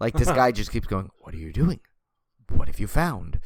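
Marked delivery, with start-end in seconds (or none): 1.2-3.4 drawn-out, deep bassy movie trailer narration. Describing a movie trailer's voiceover, imitating slow trailer voiceover. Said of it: "in that like really slow".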